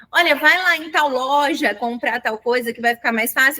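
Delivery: ordinary talk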